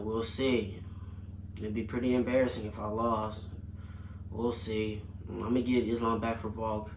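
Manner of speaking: low, flat, dead level monotone. Mocking a champion's dull talk on the microphone: monotone JDM impression. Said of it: "it's very monotone".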